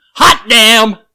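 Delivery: piercing, shrill, booming, full-volume joyful scream. Retelling the reaction to a boss's call with good news, reenacting a joyful scream. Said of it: "I should have warned you I was going to scream".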